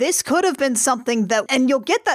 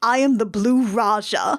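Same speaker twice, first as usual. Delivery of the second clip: heavily laid-on, put-on posh British accent. Retelling how he turned to his mom and put on the accent: Blue Raja accent. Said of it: "puts on the accent".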